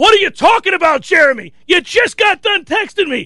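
heated, half-shouted mild yell, pitched high. Retelling phoning a man he hadn't spoken to in five years: retelling his own yelling. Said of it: "and I'm yelling at him".

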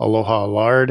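ordinary talk, nothing marked

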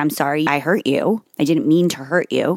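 ordinary talk, nothing marked

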